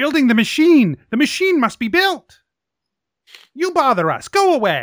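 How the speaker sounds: put-on high goblin creature voice. Voicing goblins that refuse to stop building: goblin voice. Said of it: "the goblins are still climbing all over the machine".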